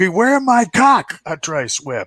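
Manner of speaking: very high-pitched yell. Retelling a player's battle cry while whacking people: imitating someone yelling. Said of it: "the whole time he's yelling out".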